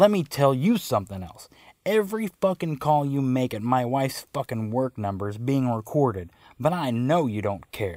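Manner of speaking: ordinary delivery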